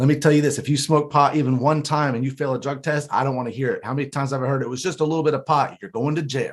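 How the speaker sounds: lofty, businesslike, matter-of-fact, condescending tone. Retelling the drug class leader laying out the rules, mimicking condescending matter-of-fact lecture. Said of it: "when that person says that so matter of factly".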